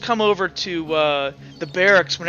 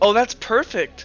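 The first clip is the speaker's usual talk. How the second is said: weary, put-upon, exasperated, fed-up tone; 4 semitones higher than usual. Voicing a character who rolls his eyes at Uhtred: said with an eye roll. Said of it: "he kinda rolls his eyes as he looks at Uhtred and goes".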